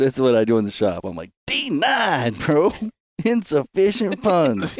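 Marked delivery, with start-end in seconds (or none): 1.5-4.8 shouting. Imitating the clerk's line when a card declines in the shop: imitating someone yelling.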